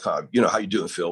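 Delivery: put-on Western Pennsylvania accent. Imitate how a buddy from somewhere near Pittsburgh talked, in a Western Pennsylvania accent. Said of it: "he sort of talked like that".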